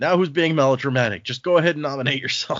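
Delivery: shouted taunting jab. Retelling a chapter scene where somebody in the room yells out: imitating someone yelling out. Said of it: "somebody just yells out".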